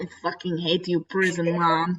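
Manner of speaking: grumbling delivery in a put-on Russian accent. Voicing a pet cat who resents scheduled visits: put-on russian accent for cat. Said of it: "He has a, a Russian accent in my brain".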